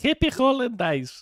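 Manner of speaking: put-on very high-pitched old Greek lady voice. Reading out a listener's greeting: little old greek lady voice. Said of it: "It sounds like a little old Greek lady".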